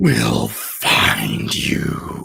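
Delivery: deep, loud, rough, creaky rumbling voice. Narrator voicing the voice the players suddenly hear, rumbling voice. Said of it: "you hear this rumbling voice".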